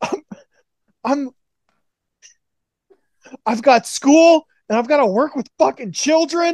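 aggrieved wrestling-promo rant. Imitating Negative One cutting an intense promo, imitating Negative One pissed off. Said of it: "he's just all pissed off".

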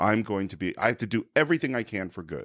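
usual speaking voice

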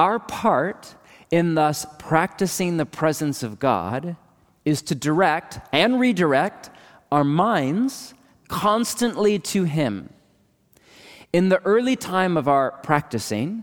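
slow, deliberate reading. Reading a favorite quote aloud so it sinks in: reading really slowly. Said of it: "I just want to read this really slow".

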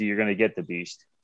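plain

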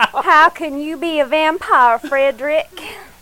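bad put-on Southern accent. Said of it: "hopefully bad imitations of, of, of these actors".

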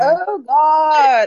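screaming. Speaker reacting mid-discussion about a doctor, screaming. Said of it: "I'm so sorry for screaming".

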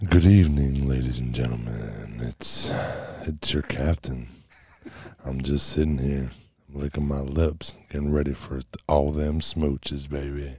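deep, silky, smooth late-night jazz DJ voice. Asked to do it again, the speaker redoes a smooth jazz radio voice. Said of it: "Do it again".

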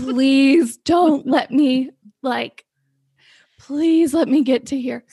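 play-acted, slow, desperate, begging plea. Retelling holding it in on a drive home: imitating own desperate pleading. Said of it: "pleading with God".

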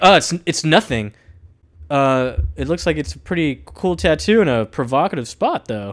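ordinary talk, nothing marked

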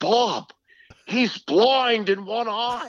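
put-on thick Boston accent, very high and slow. Retelling a radio host's words to a team executive: imitating Ken Beatrice's Boston accent. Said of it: "he had this thick Boston accent".

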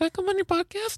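very high squeaky voice. Quoting a guest's text asking to come on the podcast: imitating Josh Peterson. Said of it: "in exactly that voice".

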